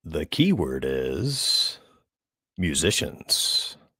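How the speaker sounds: very low, slow, drawn-out game-show announcer voice. Giving a contest keyword after being asked for a co-host impression: Ethan impression. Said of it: "doing your best Ethan impression".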